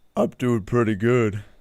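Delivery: low-pitched voice. Answering a friendly greeting from another speaker: deep voice. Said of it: "you have such a deep voice".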